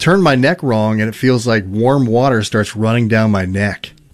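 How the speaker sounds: ordinary delivery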